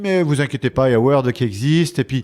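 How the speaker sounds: normal talking voice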